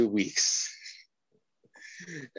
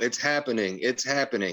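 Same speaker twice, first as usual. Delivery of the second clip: ordinary talk, nothing marked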